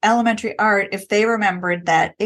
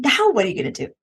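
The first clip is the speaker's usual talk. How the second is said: put-on excited voice; 2 semitones higher than usual. Retelling a reply to a student who made a mistake: imitating own excited reply. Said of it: "I do that, like, excited".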